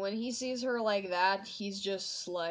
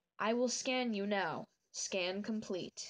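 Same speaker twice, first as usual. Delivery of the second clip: put-on robot companion voice. Describing a favourite character and how he talks: Baymax voice. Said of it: "I love how he talks".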